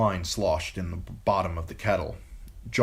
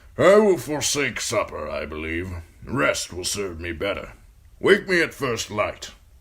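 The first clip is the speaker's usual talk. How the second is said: put-on gruff, raised old voice; 5 dB louder than usual. Narrator reads the old man speaking after stroking the bird, gruff. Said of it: "the old man said gruffly. / but the old bear smiled through the gray of his beard. / the old man said gruffly. / the old man said gruffly. / the old man said gruffly".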